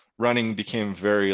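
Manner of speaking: plain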